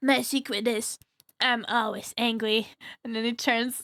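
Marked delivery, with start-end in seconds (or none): 0.0-2.7 put-on cartoon kid voice. Quoting a favorite Hulk scene, in an Eric Cartman voice. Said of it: "in Eric Cartman's voice".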